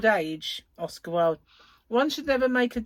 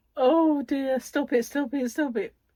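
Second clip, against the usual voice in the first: crying with laughter while talking, higher; 3 semitones higher than usual. Reacting to a joke, crying with laughter. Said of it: "Look at me, I'm crying".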